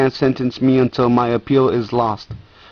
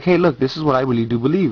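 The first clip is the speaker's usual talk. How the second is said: put-on quick, calm, even, matter-of-fact plain delivery. Telling the listener how they say it, the speaker re-enacts a calm statement. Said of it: "I just say it like".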